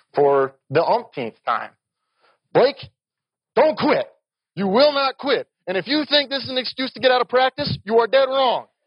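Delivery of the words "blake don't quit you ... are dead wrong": mock, very high, shrill shouting and screaming. Retelling what the coach screamed while running alongside: imitating someone screaming. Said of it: "he is screaming down at me".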